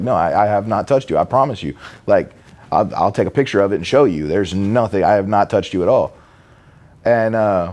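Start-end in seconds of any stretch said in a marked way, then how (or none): none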